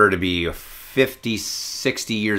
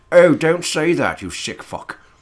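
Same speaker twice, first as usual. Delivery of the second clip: grumbling, surly British butler voice, pitched up; 8 semitones higher than usual. Playing Batman, quoting his manservant scolding him: mock-surly British manservant voice. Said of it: "I had a surly British manservant to go".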